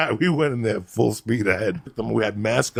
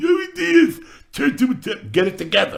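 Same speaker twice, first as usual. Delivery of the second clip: very high, loud, mock panicked babbling. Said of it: "you're talking like".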